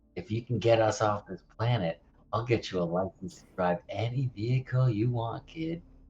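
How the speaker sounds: speaking in a whisper. Making a quiet in-character offer to another character: whispering. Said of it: "I go's gonna whisper to Benji".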